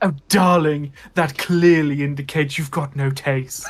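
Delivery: put-on catty voice. Performing comebacks in character as Glace: catty Glace voice. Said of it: "how catty I could be to play Glace".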